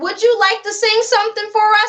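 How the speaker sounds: high, courteous, polite tone. Acting out how an interviewer could ask politely: imitating a polite request. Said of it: "saying it like that".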